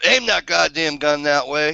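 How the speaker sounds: acted-out yelling. Telling a story about a gun misfire, retelling a yell at the guy holding it. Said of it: "and I'm like yelling at him".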